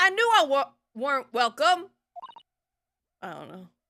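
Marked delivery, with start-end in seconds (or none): 0.0-1.9 attempted British accent, high and loud. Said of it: "trying to do a British accent".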